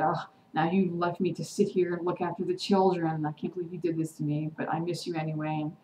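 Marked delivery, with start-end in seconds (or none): none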